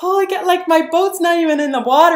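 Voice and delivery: high, loud panicked gasp, blurted out.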